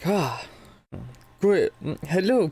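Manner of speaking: failed, unconvincing attempt at a German accent. Narrating the scene, voice Silverhand greeting you in an attempted German accent. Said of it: "I cannot do a German accent".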